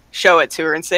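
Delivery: ordinary talk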